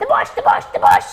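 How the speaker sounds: very high, very slow, stammering owl voice. Act out the owl telling Tails about the bush, in a put-on stuttering owl voice. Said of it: "but he stutters".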